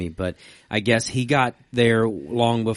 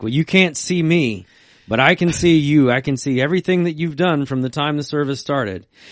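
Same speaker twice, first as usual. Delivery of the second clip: big, resounding, raised, booming preacher voice; 5 semitones higher, 4 dB louder than usual. Retelling how the minister suddenly addressed the church, booming voice. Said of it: "his voice booms".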